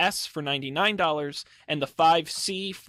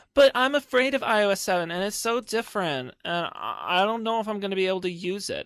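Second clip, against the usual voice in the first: put-on dumb, airheaded Valley Girl voice; 4 semitones higher than usual. A speaker mocks people who haven't upgraded, in a valley girl voice. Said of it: "stupid person uh, slash Valley Girl voice".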